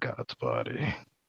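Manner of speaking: very hushed, very quiet grumble through teeth. A storyteller voices a character cursing under his breath: muttered through teeth. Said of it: "really under his breath, but through his teeth".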